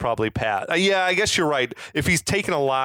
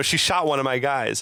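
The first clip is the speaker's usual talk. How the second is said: ordinary talk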